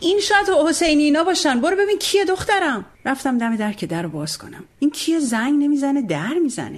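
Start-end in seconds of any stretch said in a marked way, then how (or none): 0.0-2.9 mock high shouted call, as if from afar. Dad shouts from the room to his daughter after a knock, shouting from another room. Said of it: "بابا از سخونه داد زد".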